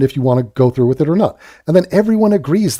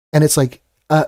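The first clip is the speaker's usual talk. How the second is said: normal talking voice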